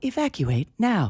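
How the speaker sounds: pleasant, calm, serene automated announcer voice. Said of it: "a very pleasant way of telling you".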